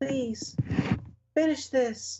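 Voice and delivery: small, piercing, very high voice. Game master voices a tiny voice heard through a creature's gibberish: tiny voice. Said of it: "you hear a tiny voice pierce your ears".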